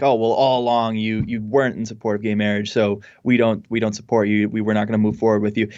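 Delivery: ordinary delivery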